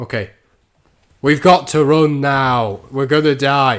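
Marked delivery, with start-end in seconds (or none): 1.2-3.8 very loud, slow, deliberate dramatic stage delivery. Retrying a dramatic escape line with more feeling, which comes out just louder: louder. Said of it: "No, that's just louder".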